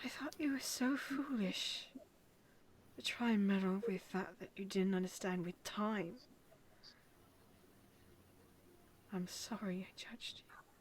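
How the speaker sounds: shaky, breathy voice. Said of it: "lets out a really shaky breath".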